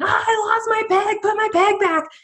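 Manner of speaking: put-on very high, shrill, drawn-out wailing child's scream. A parent retells their son's reaction to losing a peg: imitating a son screaming. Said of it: "he's screaming".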